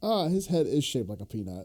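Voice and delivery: ordinary talk, nothing marked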